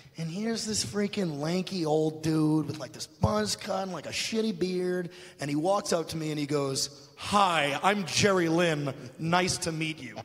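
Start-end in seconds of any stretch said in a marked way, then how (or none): 7.2-10.2 acted-out, slow, sarcasm-dripping tone. Retelling a man greeting him behind the curtain after a match, imitating Jerry Lynn's sarcasm. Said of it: "Just dripping with sarcasm".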